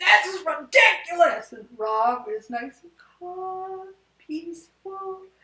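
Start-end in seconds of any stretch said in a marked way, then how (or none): 0.0-1.5 play-acted, very loud, livid, angry yelling. Recounting losing patience with something that would not fit: retelling an angry yell. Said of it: "I'm yelling".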